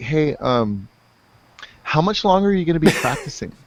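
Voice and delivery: gentle, polite tone. Retelling a mother's late-night question about guitar practice: imitating mom asking kindly and politely. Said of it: "real kindly and politely be like".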